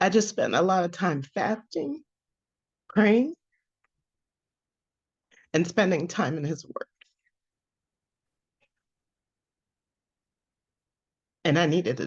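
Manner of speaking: tearful, crying through the words. Sharing what the past year taught them, crying while talking. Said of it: "even though I'm crying".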